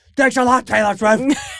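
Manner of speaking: disgruntled, losing-it voice. Retelling a prank where he played a disgruntled groom: retelling a disgruntled groom losing it. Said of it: "so out of his element, losing it".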